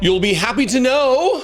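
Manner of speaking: mocking, plainly insincere tone. Bringing news to the audience: sarcastic. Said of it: "as I say sarcastically".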